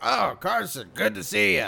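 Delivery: rough, gravel-filled army general. Describing a game, imitating the rescued general greeting Carson, gravelly voice. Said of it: "It is a mouthful of gravel voice".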